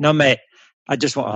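attempted South African accent sliding into English. Speaker quoting a man's reply to an offer of bluntness, attempted South African accent. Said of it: "in his South African accent".

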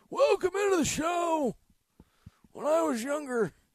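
put-on very high-pitched old-timer, old man character voice. Radio host showing the voice he might do on the show, old man voice. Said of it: "just be doing like the old man voice".

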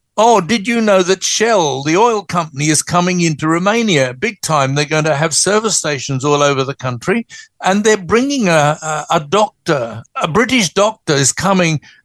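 ordinary talk

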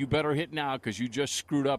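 ordinary delivery

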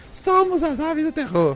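very high, tiny, small put-on voice. Joking that terror birds sound like a biker gang: put-on little voice. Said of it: "com essa vozinha assim".

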